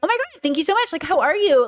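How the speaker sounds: high, elevated, polite masked voice. Showing the people voice she uses in public, a high elevated voice. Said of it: "I hire my pitch, like my my people voice is much like".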